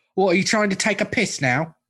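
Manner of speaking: put-on, high, laid-on, exaggerated British accent. Two hosts joke around, one doing a crime-fighting bit in a put-on British accent. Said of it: "good at British".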